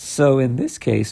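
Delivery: voice breaking up. Tutor explaining complex numbers in a video, voice breaking. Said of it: "sorry for my voice breaking".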